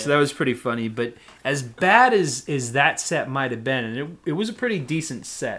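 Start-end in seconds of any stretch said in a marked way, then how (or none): none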